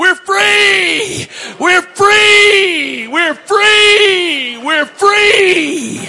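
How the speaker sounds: very high, loud, shrill joyful screams, freely stretched. Recounting a crowd whose faces changed to huge smiles, retelling people screaming. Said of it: "they started screaming".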